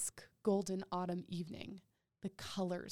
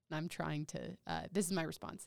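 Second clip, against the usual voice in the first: ordinary talk, nothing marked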